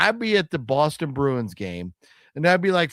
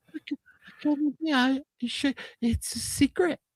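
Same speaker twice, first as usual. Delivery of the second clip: put-on little kid voice, higher and quieter; 8 semitones higher, 5 dB quieter than usual. Retelling a video of a little kid: imitating a little kid. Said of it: "The little kid, he's like".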